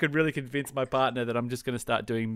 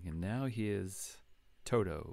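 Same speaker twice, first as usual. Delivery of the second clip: put-on smooth late-night radio DJ voice, lower, quieter; 4 semitones lower, 10 dB quieter than usual. Imitating a doctor as a late-night radio host: imitating a smooth late-night radio DJ. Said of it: "late night smooth radio".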